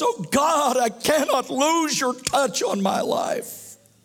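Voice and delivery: anguished pleading. Speaker voicing a prayer from scripture, acting out David's agony. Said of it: "Hear the agony in David's voice".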